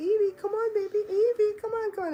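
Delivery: very high-pitched, coaxing calling voice. Retelling walking in and calling to their dog evie: high-pitched voice. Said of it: "I'm in that high pitched voice".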